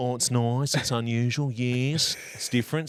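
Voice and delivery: put-on Australian character voice. Retelling how his wife would do a voice from the show, a Kath impression. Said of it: "she could do a Kath and Kim impression".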